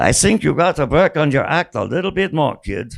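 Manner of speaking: put-on dry, clipped Austrian accent. Retelling a guest's comment to a child performer: Billy Wilder's clipped Austrian accent. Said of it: "In a clipped Austrian accent".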